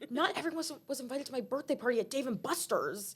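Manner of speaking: throwaway grumble, muttered under the breath. Recounting an actor's one-liners in a show, retelling a muttered aside. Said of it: "said under his breath".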